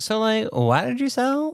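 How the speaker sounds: pitch rising very high and bouncing up and down. Retelling a friend's text to them: imitating a friend in a Girl Scout voice. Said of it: "so I sound like a Girl Scout".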